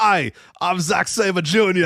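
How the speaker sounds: very slow, very drawn-out, terrible fake English accent. Retelling how someone introduced himself in a terrible fake English accent. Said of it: "it's like a terrible voice".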